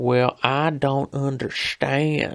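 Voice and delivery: very slow rural Tennessee hills drawl. Imitating a guy with a deeper voice: deep tennessee hill accent. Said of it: "a deeper voice, but he's got more of that, I want to say, Hills of Tennessee type of thing".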